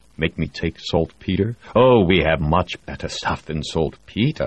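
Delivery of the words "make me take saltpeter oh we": ordinary delivery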